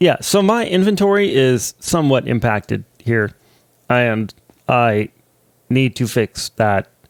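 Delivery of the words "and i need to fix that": mechanical, robotic delivery. A youtuber narrating his own video, talking like a robot. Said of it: "I am talking like a robot".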